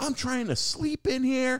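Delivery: imitated lady screaming. Retelling how a lady came out at noon: imitating a lady screaming. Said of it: "and she screams. She's like".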